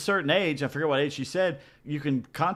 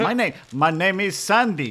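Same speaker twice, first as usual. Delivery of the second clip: loud, fake American accent over a foreign accent; 3 semitones higher, 6 dB louder than usual. Retelling a phone agent's greeting: imitating accent faking American. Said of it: "she was trying to pretend to be American".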